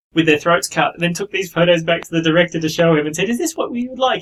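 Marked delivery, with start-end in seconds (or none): 3.3-4.2 put-on really sweet, sugary, pitched-up voice. Retelling how a makeup artist showed the director photos: imitating a really sweet voice. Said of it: "in this really sweet voice".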